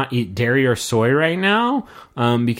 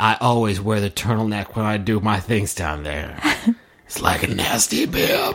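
put-on sultry, seductive bedroom voice; 2 semitones lower than usual. Introducing Nick, the speaker talks in Nick's sex voice. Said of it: "This is Nick's sex voice".

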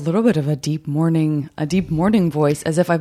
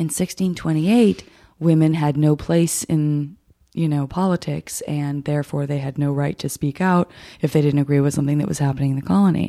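soothing, calm documentary narrator voice. Describing a reality show, imitating its soothing documentary narrator voice. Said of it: "there is a soothing documentary voice".

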